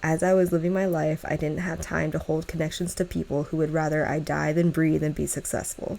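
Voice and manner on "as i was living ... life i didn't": ordinary delivery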